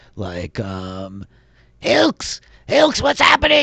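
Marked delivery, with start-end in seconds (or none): 1.8-3.6 high, raised yell, sounding far off, echoing. Voicing a scout calling from the back of the cave: NPC yelling from afar. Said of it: "Wojciech yelling from the back of the cave".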